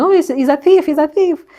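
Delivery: high, loud shout. Retelling shouting at someone trying to grab the bag: retelling a shout. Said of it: "I started shouting".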